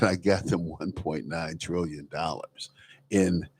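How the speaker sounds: quiet, low whisper. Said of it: "Joe Biden whispering".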